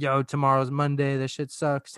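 mock urgent, mild, fired-up little scream. Voicing a tiny inner self dreading Monday: imitating an inner scream. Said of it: "a miniature me inside of me is screaming like".

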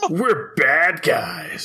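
put-on cartoon villain voice. Describing how the villain talked: imitating Walt's villain voice. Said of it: "the way he talked was just like".

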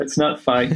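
words spoken through laughter. Describing a catastrophic event as a sales tool, laughing while talking. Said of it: "sorry for laughing".

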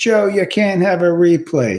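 put-on Boston accent. Speaker quotes a cousin's reply to them, imitating a boston accent. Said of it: "he's got a very Bostonian accent".

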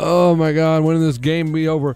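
mock downtrodden voice. Imitating fans in their seats at a game, imitating a downtrodden fan. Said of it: "go from downtrodden to like".

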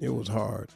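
bone-dry, terse, short delivery. Answering a sports question in a mock interview: Bill Belichick impression. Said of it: "I'm gonna answer 'em as Bill Belichick".

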